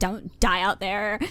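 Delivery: put-on sincere, worried, earnest Valley Girl voice. A listener quotes a character's genuine moment back, in a Valley Girl tone. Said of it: "the genuine moment with the Valley Girl tone".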